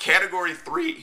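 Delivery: voice cracking into a very high squeak. Explaining how a fight is judged, the speaker's voice is cracking. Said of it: "that was a massive voice crack".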